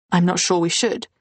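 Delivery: normal talking voice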